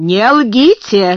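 exclaimed, exclamation. Narrator reads Miss Minchin's line to Becky about the pie, exclaiming. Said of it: "воскликнула она".

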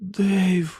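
soft, high half-whispered call. A woman calls to a man by name, half-whispered. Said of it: "прошепотіла вона".

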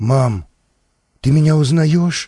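ordinary delivery

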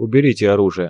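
ordinary delivery

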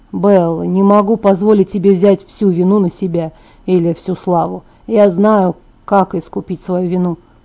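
plain

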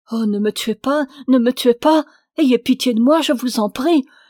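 loud, crying, begging, pleading voice. Narrator reading the poor woman's words to Frimelgus, crying out, begging. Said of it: "criait la pauvre femme".

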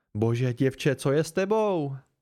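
usual speaking voice

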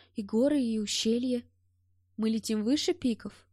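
plain

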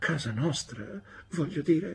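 frightened stammer, high and soft. Reading a story, a frightened mother corrects herself, stammering. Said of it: "balbettò mia madre, evidentemente spaventata".

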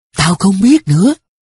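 quavering, unsteady. Narrator reads Hương Nhí's answer in the story, trembling voice. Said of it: "đáp giọng run run".

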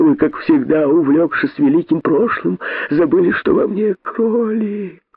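pleading. Reading a fable, the narrator voices a rabbit begging the great python. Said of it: "взмолился косой".

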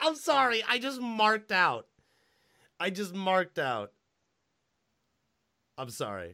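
swooping words broken up by laughter. Apologizing for getting excited about a movie: laughing while talking. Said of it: "I'm laughing".

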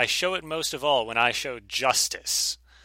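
ordinary talk, nothing marked

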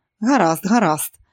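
plain

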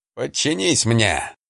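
serpent-like voice, almost growled. Narrator reading the crested serpent's words to the cobra, almost growling. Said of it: "почти прорычал змей".

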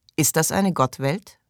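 plain

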